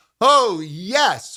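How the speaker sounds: lively, really animated. Instructor modeling a phrase for the listener to repeat, animated. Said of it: "let's stay really animated".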